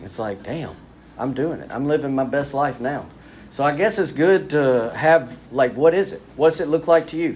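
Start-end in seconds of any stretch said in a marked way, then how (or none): none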